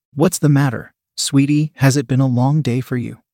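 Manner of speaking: plain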